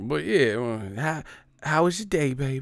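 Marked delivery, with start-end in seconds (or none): 1.0-2.6 put-on Southern accent. Acting out the mom talking to the speaker, imitating mom's southern voice. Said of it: "my mom gonna have a Southern voice".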